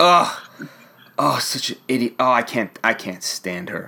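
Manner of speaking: mock-angry reading aloud. Husband acting out his wife's reaction while reading a comic series, imitating wife's angry reading. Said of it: "she's reading it with so much anger".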